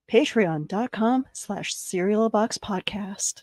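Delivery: seductive whisper. Asked to hold the microphone close and whisper, say it in a sexy whisper. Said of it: "whisper with that sexy voice".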